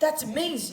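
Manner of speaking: loud, sarcastic show of being impressed. Reacting to another player's clever move: sarcastic. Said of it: "are you being sarcastic?".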